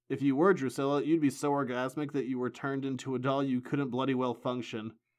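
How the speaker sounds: ordinary delivery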